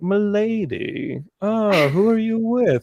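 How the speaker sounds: put-on high, slow, hoity-toity old-fashioned courtly voice.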